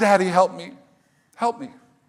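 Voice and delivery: mock-crying little girl voice, pleading. Dad retelling his scared daughter at the pool, imitating her crying. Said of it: "she starts crying".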